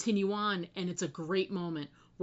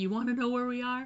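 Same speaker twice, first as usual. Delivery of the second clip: put-on overjoyed, happy disbelief, higher pitch; 5 semitones higher than usual. Retelling an episode, quoting a character seeing a vault: imitating an overjoyed character. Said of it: "she's just so happy, and she can't believe it".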